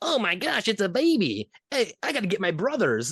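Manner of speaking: very high, swooping, squeaky elf voice. Retelling a story where elves find a baby, elf voice. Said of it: "they have like voices that just sound like this".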